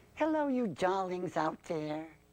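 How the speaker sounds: high ventriloquist-dummy voice. Demonstrating a ventriloquist figure with its own character: Tessie voice. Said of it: "I want you to meet Tessie".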